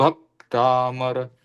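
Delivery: Bhaktamar with stress on the first syllable भ. Recalling a pronunciation lesson: stress on भ in Bhaktamar. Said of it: "भ के ऊपर जोर देने के लिए बोला था, भक्तामर, इस प्रकार से".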